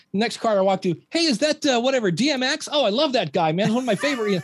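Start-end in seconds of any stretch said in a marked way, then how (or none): 1.0-4.2 high-pitched, fawning, overly friendly chatter. Retelling greeting car hop customers for tips: imitating own sucking-up to customers. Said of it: "suck up to everybody trying to get your tips".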